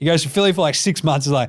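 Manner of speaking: usual speaking voice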